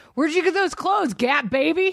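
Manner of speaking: put-on high, yelled taunting tone. Retelling a TV scene's insult, imitating Danny McBride yelling. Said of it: "where he was yelling".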